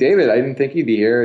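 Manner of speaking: plain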